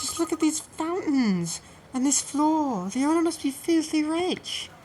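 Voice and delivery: excitedly loud voice. Just arrived at the Gilded Seven, a visitor speaks to the Professor, loud and excited. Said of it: "do try to keep your voice down".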